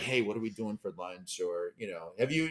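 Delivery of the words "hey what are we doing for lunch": hushed, half-whispered aside. Retelling chatting during a church service: imitating a half-whisper in church. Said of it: "and we're whispering, like".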